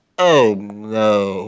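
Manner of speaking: put-on glum, droopy cartoon-dog voice. Quoting a prime minister character, doing a Droopy Dog impression. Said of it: "very clearly like a Droopy Dog reference".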